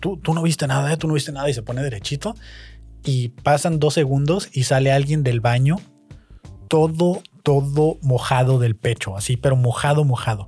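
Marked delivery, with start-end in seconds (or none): 0.0-1.5 mock-frightened, put-on man's voice, sounding scared. Retelling how Don Rigo came back from the bathroom, imitating Don Rigo frightened. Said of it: "vuelve muy asustado Don Rigo".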